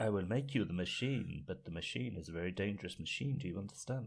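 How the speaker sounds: put-on slight, faint indeterminate European accent. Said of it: "That's the kind of thing that he says".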